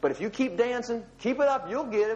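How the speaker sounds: high, very sarcastic, mocking taunt. Retelling Elijah urging the worshippers to keep dancing, Elijah's sarcastic taunt, retold. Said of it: "Elijah here is being very sarcastic".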